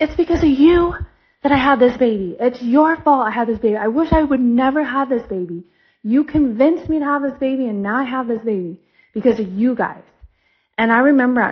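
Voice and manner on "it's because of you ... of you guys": mock accusing, mild, held-back screaming. Telling a story, acting out a woman at a guy: imitating someone screaming. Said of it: "And she's like screaming at the guy".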